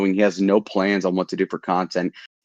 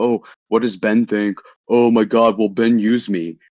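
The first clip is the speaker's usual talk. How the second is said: mock slow, sneering, mocking delivery. Mocking the others for caring what ben thinks: mocking imitation of the others. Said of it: "You're like".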